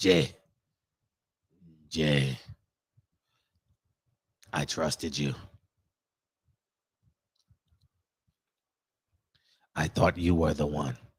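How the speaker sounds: very low, gangster-film mobster voice. Acting out a betrayal scene from a mobster movie: mobster movie voice. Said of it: "How would they say it in, uh, in the mobster movie?".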